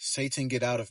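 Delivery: murmured under the breath. Retelling what a woman murmured as the speaker helped her into a chair, murmuring. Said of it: "she was just murmuring this phrase".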